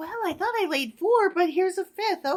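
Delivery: sweet, high, meek, innocent little bird voice. Acting out a bird finding an extra egg in her nest: voicing a sweet, unassuming bird. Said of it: "the sweet, unassuming bird is like".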